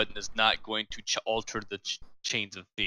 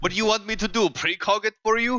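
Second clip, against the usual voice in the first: very high, loud, put-on Russian accent; 11 semitones higher, 5 dB louder than usual. Answering another player's question in character: russian accent. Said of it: "I changed to a Russian accent".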